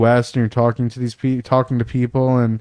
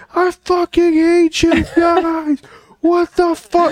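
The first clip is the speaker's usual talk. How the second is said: mock very high, drawn-out wailing, screaming sob. Recounting a guy's reaction to a Halo spoiler, retelling screaming and crying. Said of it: "starts screaming and crying".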